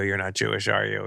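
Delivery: ordinary talk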